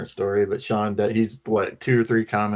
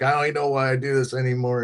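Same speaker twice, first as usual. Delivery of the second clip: mock fed-up, angry, cussing rant; 4 semitones higher than usual. Retelling someone's long cussing rant: imitating a cussing rant. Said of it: "had a big cussing and long rant".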